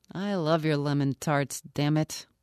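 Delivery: ordinary delivery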